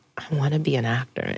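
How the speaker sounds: tiny, small, soft voice. Retelling a conversation with their mom, speaking in a very small voice. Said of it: "in a very small voice".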